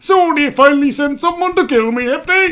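poorly done, froggy put-on voice. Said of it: "I don't know if I can do that voice".

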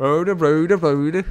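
put-on Swedish cook voice, Swedish accent. Gamer denying to Simon that he is Swedish, in a Swedish Chef voice. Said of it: "Do I sound like Swedish chef or something?".

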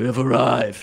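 grumbling, weather-beaten, gruff voice. A soaked carriage driver looks up at his passengers, low, grumbly voice. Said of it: "he says in a low, grumbly voice".

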